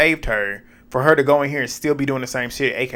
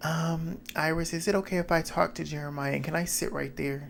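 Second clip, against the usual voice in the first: mock sugary, falsely innocent voice; 4 semitones higher, 10 dB quieter than usual. Retelling how someone walked in and asked to sit: imitating a put-on sweet tone. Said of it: "trying to talk like this".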